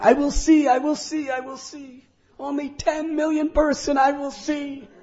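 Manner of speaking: very high, rapturous, ecstatic crying out. Retelling a man jumping and leaping in the air, acting out an ecstatic cry. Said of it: "became ecstatic, jumping in the air, leaping, crying out".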